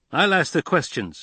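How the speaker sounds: short, high, curt, snapped delivery. Narrator voicing a soldier pointing his rifle at Zane, snapped. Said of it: "the soldier snapped".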